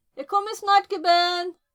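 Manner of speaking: very loud, high-pitched shout. Calling out to a kid who wants food: yelling. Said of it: "Sorry for yelling at you".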